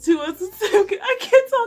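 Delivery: high, loud laughing through the words.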